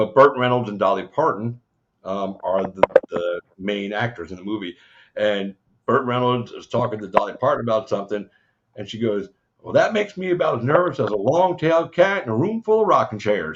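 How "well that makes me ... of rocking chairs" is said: put-on Southern accent laid on, pitched up high. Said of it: "with her accent, I love that".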